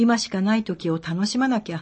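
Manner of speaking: ordinary talk, nothing marked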